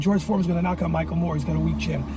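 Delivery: plain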